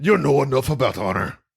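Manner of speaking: put-on hard, harsh, mean-sounding Scottish accent. Repeating a movie line after another speaker: hard, mean Scottish accent. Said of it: "a hard, mean Scottish".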